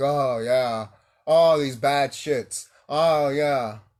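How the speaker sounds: slow drawn-out fake moans.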